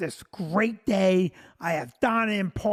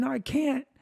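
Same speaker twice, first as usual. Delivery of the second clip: acted, high, tearful crying voice; 5 semitones higher than usual. Retelling a proposal on one knee, imitating Vicky crying. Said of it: "And she's still crying".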